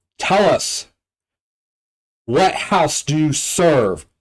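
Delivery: hollering male elf voice. Game master voicing an elf behind the interrogation room door, hollering elf voice. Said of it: "he hollers".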